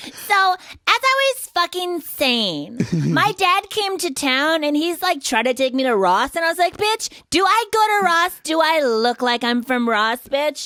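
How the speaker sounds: very high, catty, sassy put-on girly voice. Asked to hear it, the speaker shows off a put-on girl voice. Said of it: "I can do a pretty good girl".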